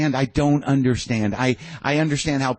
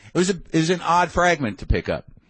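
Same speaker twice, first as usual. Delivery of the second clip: normal talking voice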